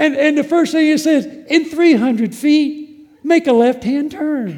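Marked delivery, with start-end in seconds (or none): 1.3-4.6 sweet, upbeat automated navigation-style voice. Quoting the device that speaks to them, imitating a sweet, positive little voice. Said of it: "this sweet little voice, positive little voice".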